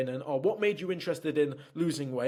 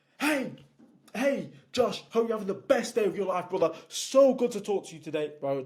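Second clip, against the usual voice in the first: way over-the-top gushing, hyped enthusiasm, pitched up; 5 semitones higher than usual. Sales tonality advice, showing what not to do: an over-the-top excited greeting. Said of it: "you're not over the top like".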